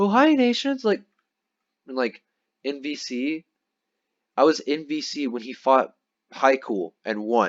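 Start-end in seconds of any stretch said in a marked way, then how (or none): 0.0-0.8 put-on squeaky teenager voice, very high-pitched. Imitating someone greeting others in a gaming chat, mocking them by doing a teenager's voice. Put-on high-pitched teen voice. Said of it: "super respectful".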